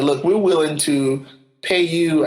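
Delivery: ordinary delivery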